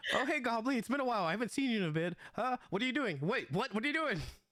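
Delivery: very high, clueless, friendly, oblivious rambling. Voicing a character who greets the goblin as it attacks: in-character NPC line. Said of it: "as you say this, he's like".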